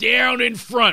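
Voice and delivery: high, slow, bad heckling Philadelphia accent. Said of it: "with that horrible accent".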